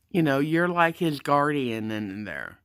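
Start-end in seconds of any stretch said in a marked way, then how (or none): none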